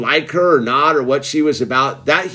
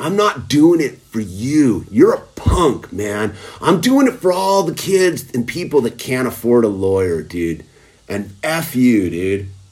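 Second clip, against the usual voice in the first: angry, pissed-off, heated outburst; 3 semitones lower than usual. Retelling what the lawyer said after the court case: imitating someone super pissed. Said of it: "he got super pissed".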